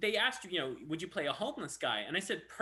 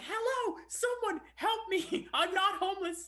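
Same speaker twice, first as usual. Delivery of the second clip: high, shrill, long-drawn mock screaming; 13 semitones higher, 3 dB louder than usual. Retelling being taken for a homeless man on set: retelling own screaming. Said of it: "I was screaming".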